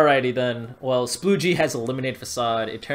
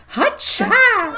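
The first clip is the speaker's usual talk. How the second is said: put-on seductive fighter yell, higher, louder; 7 dB louder than usual. Showing how Jam's cry really sounds: imitating Jam's seductive yell. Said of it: "it's more seductive".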